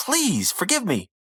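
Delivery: put-on, high, desperate begging tone. Retelling a story, voicing a character begging the wizard: acting out pleading. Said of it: "pleading with the wizard".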